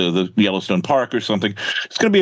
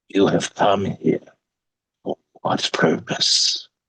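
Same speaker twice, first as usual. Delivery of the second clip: hushed, whispering voice; 2 semitones lower than usual. Retelling a scene where a shadowy voice questions the campers: whispering voice. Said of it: "they hear a voice whispering".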